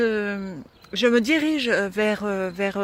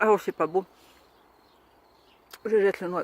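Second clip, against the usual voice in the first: talking through a mouthful. Eating fruit straight from the tree while talking, talking with mouth full. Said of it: "C'est pas beau de parler la bouche pleine".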